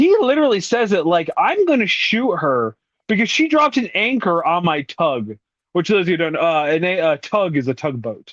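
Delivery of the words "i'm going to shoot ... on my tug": play-acted, earnest, self-justified, dead-serious vindicated tone. Retelling how he says the line in the film: imitating a vindicated delivery. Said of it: "he says it with such, uh, vindication".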